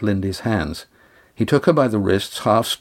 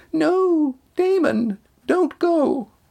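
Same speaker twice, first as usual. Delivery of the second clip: piercing, very high-pitched, shrill scream. In a story read aloud, Bronwyn screams to Damon not to go, shrill scream. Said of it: "a shrill voice screamed".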